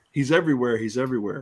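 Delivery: ordinary talk, nothing marked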